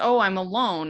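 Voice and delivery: ordinary talk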